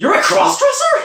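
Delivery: very loud, very high, shrill blurted shout. Retelling the sister's reaction when told: imitating sister shouting. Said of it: "completely as loud as possible".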